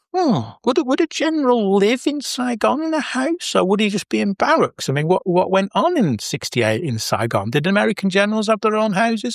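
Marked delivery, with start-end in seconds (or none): 0.1-4.8 acted suspicious tone, much higher pitch. Retelling a past conversation, the speaker repeats his own question, acting suspicious. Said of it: "I suspiciously said".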